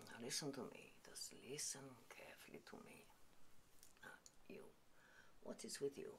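low, soft, hushed whisper.

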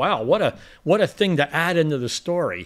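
normal talking voice

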